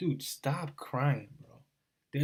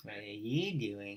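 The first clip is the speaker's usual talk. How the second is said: mock creepy babyish baby talk, quieter; 5 semitones lower, 7 dB quieter than usual. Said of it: "this guy has the creepiest fucking voice".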